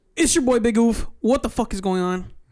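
aggressive, forceful delivery. Opening the episode with a self-introduction: aggressive delivery.

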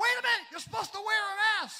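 very loud, fast, high-pitched screaming. Telling how a lady at a gas station screamed at the speaker's wife, imitating a woman screaming. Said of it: "She's screaming at my wife".

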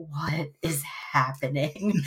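quiet, hushed, low half-whisper. Speaker recounting a guy behind them at a movie, imitating his quiet half-whisper. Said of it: "just quietly whispers".

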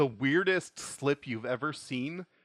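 ordinary delivery

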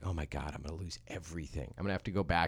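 acted out, hushed, petrified, frantic scared panic. Recounting their own thoughts in that moment, retelling being petrified. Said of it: "I am just petrified".

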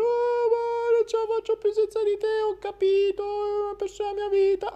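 very high, weepy, tearful pleading voice. Speaker acts out people who come back crying, mock crying and pleading. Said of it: "ti piangono".

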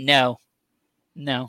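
put-on deadpan, flat delivery. Retelling how someone at the park answered a question, imitating a deadpan no.

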